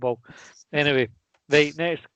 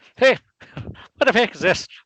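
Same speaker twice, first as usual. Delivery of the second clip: put-on Irish accent, higher and louder; 7 semitones higher, 6 dB louder than usual. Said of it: "That's Irish accent, by the way".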